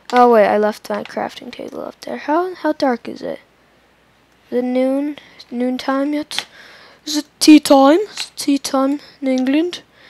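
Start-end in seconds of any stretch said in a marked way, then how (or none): 7.0-9.8 loud, poorly done, fake British accent. A player chatting while mining in a game, in a bad british accent. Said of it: "That isn't even a British accent".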